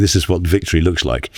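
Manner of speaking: normal talking voice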